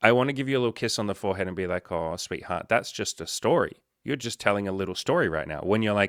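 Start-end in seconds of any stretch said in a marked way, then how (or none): none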